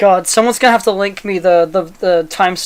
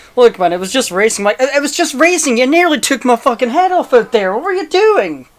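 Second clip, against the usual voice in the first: put-on heated arguing tone, much higher pitch; 6 semitones higher than usual. Acting out the other person's reply in a full-blown argument. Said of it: "a full-blown argument".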